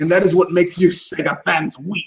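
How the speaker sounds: evil villain delivery. Telling Sega fans they need to let go: put-on evil Sith Lord voice. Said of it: "I'm gonna sound like an evil Sith Lord".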